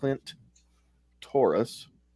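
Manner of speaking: slow, deliberate, careful, drawn-out enunciation. Saying a screen name slow to avoid a strike, 'Clint Taurus' said slowly. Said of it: "You have to say it slow like that".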